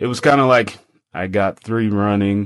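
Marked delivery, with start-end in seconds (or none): 1.1-2.5 low, level, flat monotone. Quoting a police officer's report, imitating a flat low-key monotone. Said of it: "he was just as low-key and as monotone".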